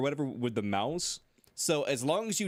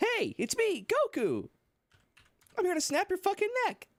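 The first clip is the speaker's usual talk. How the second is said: pitch raised very high and swinging wildly. Retelling a funny moment from the stream: Goku voice. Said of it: "Goku just coming in and be like".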